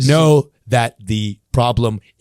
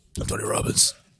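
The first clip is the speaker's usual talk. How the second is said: put-on smoker's voice, sometimes quieter. Answering how he sounds, doing a Tony Robbins voice. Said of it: "he sounds like he's like, has like a one, like he smoked too much".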